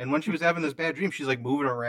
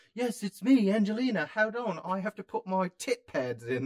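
clumsy, bad fake English accent, pitched up; 6 semitones higher than usual. Acting out a bit as Angelina, the speaker does a Moss from IT Crowd impression. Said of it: "more of a Moss from IT crowd fucking impression".

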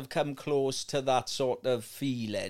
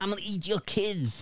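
high-pitched put-on New York accent; 6 semitones higher than usual. Recalling the Lewis against Tyson fight, speaker does a Mike Tyson impression, New York accent. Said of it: "he had a New York accent".

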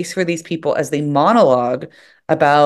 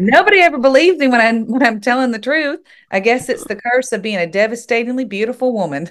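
high-pitched Southern accent from Mississippi; 8 semitones higher than usual. Trying a line again in a put-on accent: Mississippi accent. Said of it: "I got to hear that Mississippi accent".

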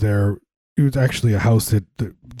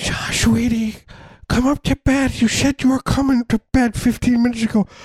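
put-on older woman's voice, pitched higher. Joking about a couple lost among their houses: Nancy Pelosi impression. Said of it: "this is my Nancy Pelosi impersonation".

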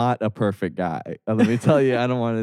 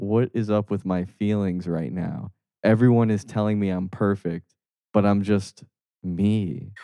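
plain

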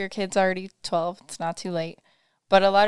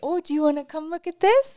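high, pitchy, pitched-up voice; 8 semitones higher than usual. Showing how they talk to a baby, in a high-pitched voice. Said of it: "I'll kind of say high pitchy more".

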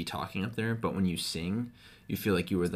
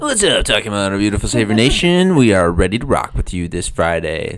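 very loud, booming on-air radio DJ voice; 15 dB louder than usual. Showing what the speaker would sound like as a radio DJ, radio DJ voice. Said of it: "That's what it'd sound like if I was a radio DJ".

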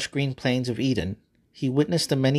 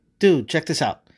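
keen, thrilled, excited, eager call-out; 3 semitones higher, 4 dB louder than usual. A narrator reads God speaking to Adam, excited. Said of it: "God said excitedly".

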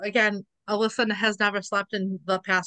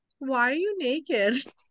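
put-on tiny little child's voice, drawn out; 5 semitones higher than usual. Retelling what she asked while the two froze in place, little tiny voice. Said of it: "this little tiny voice go".

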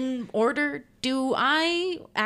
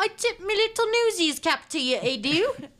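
Yugoslavian-accented speech; 9 semitones higher than usual. Joking about tipping a cap to another speaker: put-on Yugoslavian accent. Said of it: "a very authentic, uh, Yugoslavian accent".

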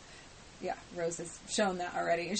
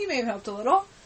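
mock-sarcastic, louder, higher; 5 semitones higher, 7 dB louder than usual. Recapping an episode where Jackie brags about her daughter, quoting Rose sarcastically.

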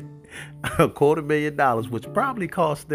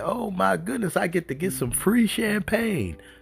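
mock giggling and laughing, excited, much higher; 8 semitones higher than usual. Retelling what he said when the champagne came out, imitating giggling, excited voice. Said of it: "he's giggling and laughing".

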